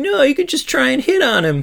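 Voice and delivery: very high, swooping whiny voice. Acting out a character who always wants to romance everything, do Andy Samberg's whiny voice. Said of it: "Samberg does that whiny voice".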